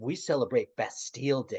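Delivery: smug, superior, dismissive, contemptuous tone. Imitating a friend of Lisa's bragging about Bastille Day, mock smug contempt. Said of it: "with such smugness and such contempt".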